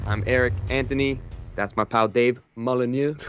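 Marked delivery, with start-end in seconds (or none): 1.6-3.2 put-on French accent, mock French pronunciation. Podcast host introduces his co-host, saying the name in a french accent. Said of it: "I say it with a French accent".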